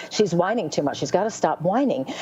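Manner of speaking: normal talking voice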